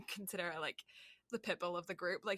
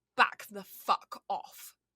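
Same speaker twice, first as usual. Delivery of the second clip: put-on strong English accent, laid on full, loud, slow; 7 dB louder than usual. Retelling turning on some people who were being rude, in a full English accent. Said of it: "I went full English".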